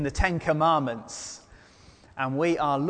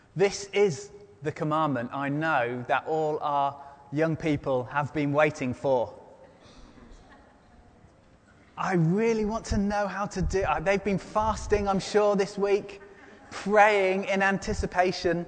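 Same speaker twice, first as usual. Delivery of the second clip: dry, heavy sarcasm with mock earnestness, feigned excitement; 4 semitones higher than usual. Telling the congregation that young people awaited this commandment: sarcastic.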